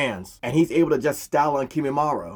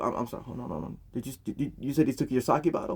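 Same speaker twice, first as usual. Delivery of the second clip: put-on shaken, rattled stammering voice, quieter; 8 dB quieter than usual. Retelling a scene where Guy learns the news: acting shaken, stammering. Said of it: "Guy is shook".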